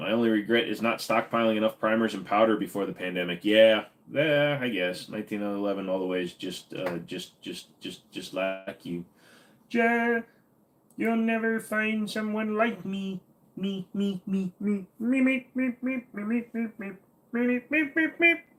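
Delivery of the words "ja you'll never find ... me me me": goofy, very high, drawn-out silly put-on voice. Answering Thomas about a favorite gun, the speaker slips into a weird silly voice. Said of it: "I don't know why I started doing weird voice".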